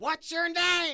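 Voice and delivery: put-on screaming, very high pitched. Retelling the commissioner screaming at a scared seventeen-year-old: imitating Lou Levy screaming. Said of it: "he's screaming at me".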